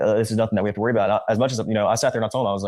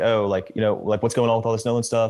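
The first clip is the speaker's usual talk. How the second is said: put-on aggravated, irritated voice. Retelling a phone call from an upset caller: imitating an aggravated caller. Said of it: "Very aggravated".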